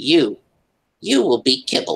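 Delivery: high, terrible put-on kitten voice. Narrator voicing a kitten backing away from the players: terrible kitten accent. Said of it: "that terrible kitten accent".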